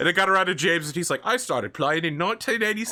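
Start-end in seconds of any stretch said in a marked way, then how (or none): 1.2-2.9 really bad put-on Australian accent. Retelling James's Warhammer intro about when he started playing: bad Australian accent imitating James. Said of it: "It was just a really bad Australian accent".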